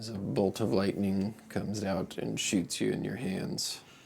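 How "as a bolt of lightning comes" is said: ordinary delivery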